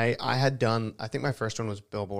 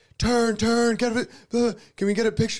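loud, very high, clamouring shouts; 12 semitones higher, 7 dB louder than usual. Retelling cameras all calling out at once, imitating photographers yelling. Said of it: "they're all yelling at you".

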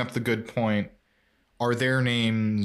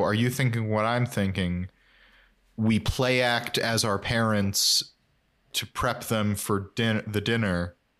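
ordinary delivery

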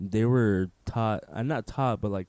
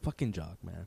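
put-on annoyed, fed-up, pissed-off tone; 4 semitones lower, 10 dB quieter than usual. Retelling own reaction when jock missed: imitating own pissed-off reaction. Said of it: "I was so fucking pissed".

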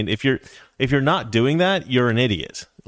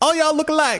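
very high, strained-up comedian delivery. Retelling a movie scene after a punch: Chris Tucker impression. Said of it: "that's my best Chris Tucker impression".

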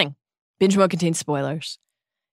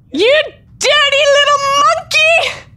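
very high, shrill, bawled outburst; 6 dB louder than usual. After Narcissa's wand is knocked away, Bellatrix turns on the elf, bawling. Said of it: "Bawled Bellatrix".

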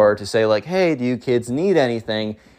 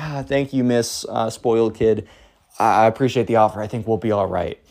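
mock meek, unsure, timid, hesitant polite tone. Retelling a guest's reply to a host's mom offering food: imitating a timid reply. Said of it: "looks at her very timidly, is like".

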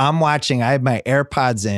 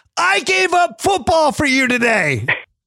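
very high, shrill, shouted outburst. Retelling an argument in the car with a son: retelling own yell. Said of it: "it ends with me yelling at him".

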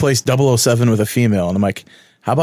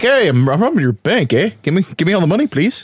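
higher, polite put-on Canadian voice; 6 semitones higher than usual. Hosts joke about an actor arrested for bank robbery in Canada, mock-polite Joey Kramer impression. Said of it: "He's probably all polite too".

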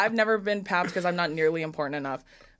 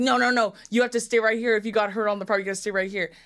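acted, fussy, insistent half-shout; 3 semitones higher than usual. Recounting an injury story, quoting a woman who was there, retelling a woman yelling. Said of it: "She's screaming for the medic".

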